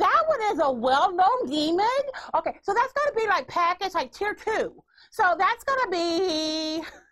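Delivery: high, drawn-out, salesy infomercial announcer voice. Going over the package options with the other speaker, in an infomercial voice. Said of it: "Why are you doing that voice?".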